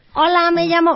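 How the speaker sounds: high-pitched squeaky voice. Showing how a woman with a squeaky voice introduces herself: squeaky high-pitched voice. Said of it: "mujer con voz de pito".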